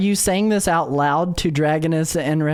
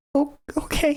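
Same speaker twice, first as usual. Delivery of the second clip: barely audible, tiny, very high-pitched squeak; 10 semitones higher, 4 dB quieter than usual. Acting out her reply after the warning, in a tiny high, quiet squeak. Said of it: "lets out this squeak of an okay".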